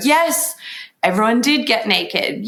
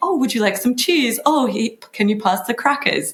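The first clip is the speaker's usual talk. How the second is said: acted, delicate, courteous, careful, very polite speech; 3 semitones higher than usual. Retelling how the women offered each other snacks: imitating a very polite tone. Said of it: "very politely".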